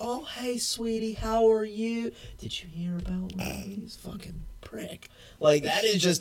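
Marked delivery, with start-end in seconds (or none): 0.0-5.1 mock fake-sweet Southern voice, higher. Imitating friendly-to-your-face Southern gossipers: imitating two-faced sweet Southerners. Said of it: "They will sit there".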